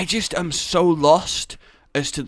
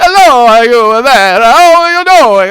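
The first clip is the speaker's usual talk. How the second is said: loud, high, over-the-top exaggerated fake Italian accent; 10 semitones higher, 16 dB louder than usual. Retelling what she said from the kitchen, in an offensive italian accent. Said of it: "it's incredibly offensive Italian Daddy".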